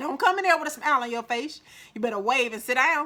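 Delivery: loud, fast Mississippi voice.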